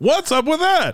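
drawn-out high whine.

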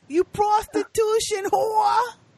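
put-on very high-pitched New Jersey accent. Showing the group how the insult should be said: Teresa's New Jersey accent. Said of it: "say it like Teresa from New Jersey Housewives".

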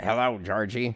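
weird New York man's voice. Describing the older Pennywise, imitating Tim Curry Pennywise voice. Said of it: "weird New York guy".

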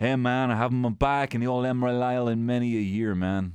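put-on Irish-American accented character voice. Father talking in accents to his son, American Irish guy accent. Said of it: "my kind of American Irish guy who hasn't seen his kid in 20 years".

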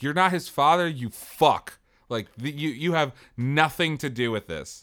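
acted-out mock screaming. Speaker retells screaming at a man on television, retelling screaming at the tv. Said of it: "I like am screaming at the television".

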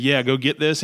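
normal talking voice

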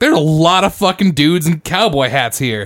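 ordinary talk

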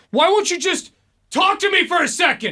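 very high-pitched screaming. Retelling a man in a parking lot at night: imitating a guy screaming. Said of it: "I hear a guy screaming".

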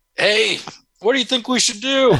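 very high, loud yell. Retelling a night in tents near growling bears: imitating someone yelling. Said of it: "I remember yelling over to you".

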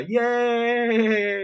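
sarcastic, very high, stretched, drawn-out cheer. Speaking to listeners about the past year, a sarcastic yay. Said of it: "It was a very sarcastic yay".

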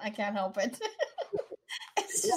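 words broken up by laughter while talking. Apologizing to the others for laughing: laughing while talking. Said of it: "I'm just laughing".

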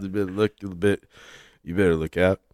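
fake, slightly drunk-sounding voice. Joking with the other speaker: pretending to sound a little drunk. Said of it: "trying to sound a little drunk".

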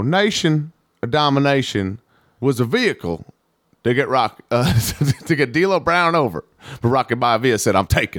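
high, rehearsed, well-worn, lecturing spiel. Retelling how Bruce would deliver his spiel to them: Bruce impersonation. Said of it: "Is that your Bruce impersonation?".

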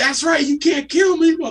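put-on high, loud yell. Telling someone about a funny moment when a man survives everything, retelling a yell. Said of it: "he's just like yells like".

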